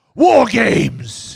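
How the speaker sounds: very high, very loud, rough, shrill bellowing yell. Reading a chat comment that a wrestler shouts it: William Regal impression. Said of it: "I actually do a better Regal".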